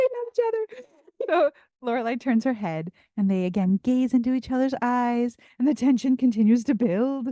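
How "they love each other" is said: high, tearful, gushing voice. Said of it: "I was like".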